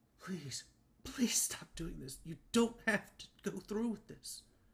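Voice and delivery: high, tearful, weeping voice. Narrating a woman in tears pleading as the listener draws blades: weeping, pleading in a low voice. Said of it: "weeping, just in a low voice, pleading".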